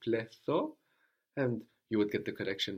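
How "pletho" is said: Pletho said with tentative, rising tone. Trying a word you have not heard before: unsure, questioning intonation. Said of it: "maybe you can show with your intonation that you're not sure about it".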